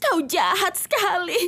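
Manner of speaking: crying while talking. Accusing the other speaker during a quarrel, crying while talking. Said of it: "Jangan nangis lagi".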